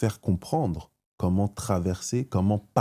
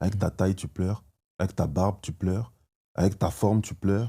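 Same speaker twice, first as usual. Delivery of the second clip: normal talking voice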